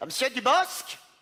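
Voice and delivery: put-on poorly done, high-pitched Québécois accent. Telling a true story, speaker quotes a police chief in a bad Quebecois accent. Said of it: "Je fais très mal l'accent québécois".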